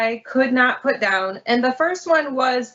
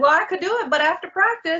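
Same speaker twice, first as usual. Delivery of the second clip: put-on young child voice, higher; 5 semitones higher than usual. Retelling a story, quoting the 12-year-old who delivered a note, little 12-year-old voice. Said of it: "like that little 12-year-old voice".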